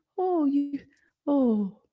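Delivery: very high-pitched, pitying, poor-you oh. Imitating visitors who come to a dying person: imitating pitying visitors. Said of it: "visited by anybody with this energy of".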